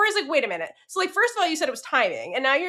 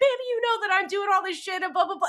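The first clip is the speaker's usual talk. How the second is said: higher, emotional, defensive lashing-out delivery; 7 semitones higher than usual. Retelling Prim's reply to Bambi on Bambi's birthday, imitating Prim, emotional and defensive. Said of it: "Prim gets emotional and defensive".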